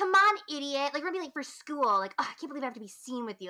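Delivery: bratty, contemptuous, nasty bossing, high and loud. Acting out a stock teen-movie older sister waking her brother: imitating a mean older sister. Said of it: "bitch of an older sister".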